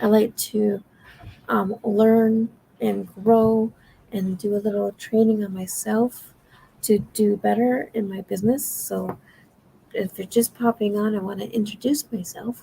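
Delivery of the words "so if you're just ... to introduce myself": quiet, soft-spoken, toned-down voice. Introducing themself to viewers while out on a balcony, talking quietly. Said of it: "I'm talking quietly because I'm on the balcony".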